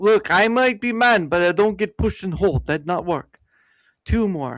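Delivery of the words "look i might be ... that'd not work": put-on fake Russian accent, higher. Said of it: "the Russian accent you're trying to do".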